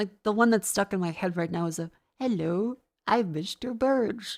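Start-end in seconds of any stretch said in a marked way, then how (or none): 2.2-4.4 slow, drawn-out cartoon voice. Doing a voice stuck in their head from Homer Simpson: Homer Simpson voice. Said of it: "Fucking Homer Simpson has ruined my vocabulary".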